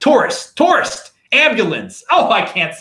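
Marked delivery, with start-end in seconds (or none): 0.0-1.1 "tourist" said in a high-pitched Baltimore accent. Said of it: "you hear that Baltimore accent when I say tourist".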